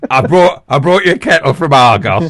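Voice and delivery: put-on northern comedian voice. Joking about the leader bringing the Queen a kettle: northern comedian impression. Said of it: "that's the only impression I do".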